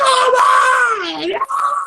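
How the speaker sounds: play-acted, very high, frantic shriek, drawn out. Retelling watching the show and screaming at it: imitating own screaming. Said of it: "screaming, like".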